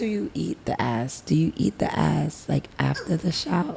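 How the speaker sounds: hushed whispering. Asking a question while her mom is in the building, whispering. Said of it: "why are you whispering?".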